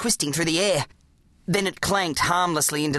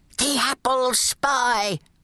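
whispering, higher and slower; 7 semitones higher than usual. A narrator reads a grandfather's line as a figure appears in a doorway: whispering. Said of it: "whispered Gramps".

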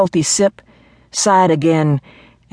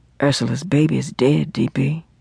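low, dull, flat-toned voice; 4 dB quieter than usual. Red answers d.p.'s questions in a low, dull voice. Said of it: "Red said in a low, dull voice".

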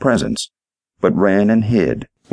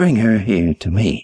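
hushed whisper. Aunt Grace, head on the pillow, speaks to Charlie leaning in; whispered. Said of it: "the woman whispered".

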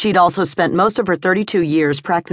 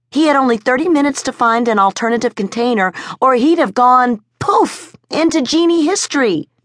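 wildly eager, insistent excitement, pitched up; 6 semitones higher than usual. Narrator reads a woman's line in a story: wildly excited. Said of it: "Her heart pounding, her throat taut, her hands shaking with wild excitement, [name] O'Mara could scarcely trust her words to be coherent".

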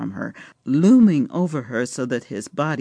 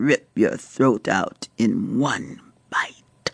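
voiced, low, slow, drawn-out stage whisper; 5 semitones lower than usual. A narrator reads a man's line to a woman, half-whispered. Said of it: "he whispered".

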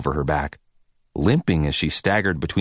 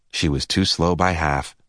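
ordinary delivery, nothing marked

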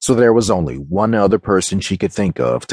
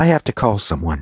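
ordinary delivery

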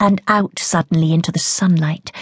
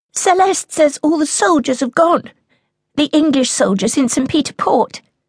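little shrill voice, very high, rapid and rushed; 9 semitones higher than usual. Narrator reads Blanche speaking up to her mother out of nowhere, rapid, little shrill voice. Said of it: "She speaks rapidly".

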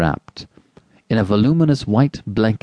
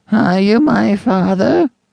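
put-on very high, creaky, cracked old man's voice; 11 semitones higher, 4 dB louder than usual. An old man lying in a crib suddenly speaks up, in a cracked, ancient voice. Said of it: "spoke in a cracked and ancient voice".

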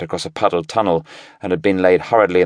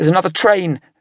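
anxious, worried, very high-pitched call; 12 semitones higher than usual. Narrator reading Daniel speaking to Paul after a blast, anxious. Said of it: "daniel said anxiously".

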